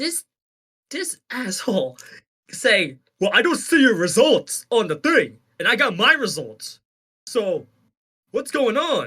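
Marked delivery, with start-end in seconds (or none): 3.2-9.1 doubting, skeptical, pressing tone. Retelling a brother's text doubting the race result: imitating brother's voice. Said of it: "That's my brother impression".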